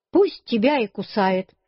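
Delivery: plain reading voice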